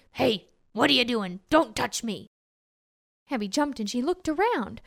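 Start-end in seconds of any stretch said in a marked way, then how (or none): 0.2-2.3 growly, cranky, grumpy grumbling growl. Narrator voicing an unseen speaker as Abby pushes the pumpkin, growly, cranky, grumpy voice. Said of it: "a growly, cranky, grumpy voice say".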